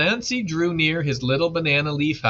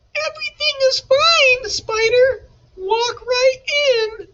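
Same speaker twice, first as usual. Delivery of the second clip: tiny, very high, squeaky little voice; 5 dB louder than usual. Narrator reads a voice answering Spider from inside the house, little squeaky voice. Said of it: "a little squeaky voice came from inside the house".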